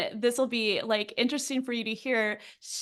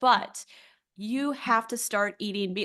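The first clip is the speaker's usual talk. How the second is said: put-on firm, emphatic, insistent tone. Retelling what a practitioner told the speaker: imitating an emphatic insistence. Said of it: "she said it that emphatically".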